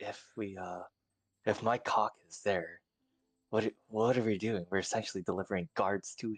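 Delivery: whispered, hushed. In character, asking a companion what to do next, whispering. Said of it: "I'm whispering".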